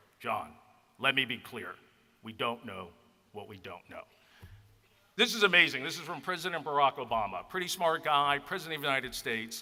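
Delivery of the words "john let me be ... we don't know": deepest baritone, dropped low. Retelling the president's words to him, in a deep baritone Obama impression. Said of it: "in that deep baritone voice".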